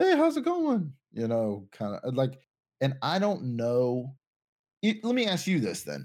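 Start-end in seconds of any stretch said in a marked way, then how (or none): 0.0-0.9 very high, friendly cartoon ghost voice. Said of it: "like a Casper type deal".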